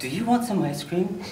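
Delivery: ordinary talk, nothing marked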